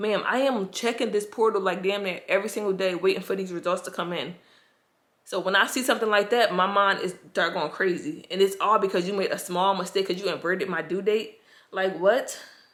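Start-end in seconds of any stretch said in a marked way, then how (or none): none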